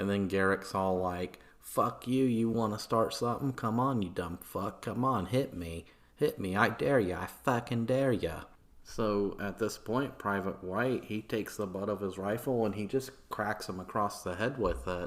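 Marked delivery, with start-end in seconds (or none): 1.6-8.4 put-on Boston accent drifting into bogan. Retelling a street confrontation, a man taunts a soldier in a fake Boston accent. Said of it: "my fake Boston accent sounds like some kind of Australian bogan accent".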